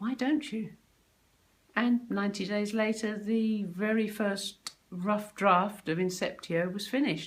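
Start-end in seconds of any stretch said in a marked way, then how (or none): 0.0-0.7 mock whisper, higher. Retelling the husband's whispered reply at the cinema: imitating a whisper. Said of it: "whispered back".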